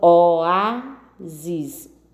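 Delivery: oásis with stress on the A.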